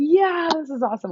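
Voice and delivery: very high, excited screaming yell. Retelling watching the show, imitating own screaming at the tv. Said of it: "screaming at the T V".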